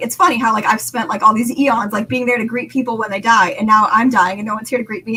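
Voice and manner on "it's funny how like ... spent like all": plain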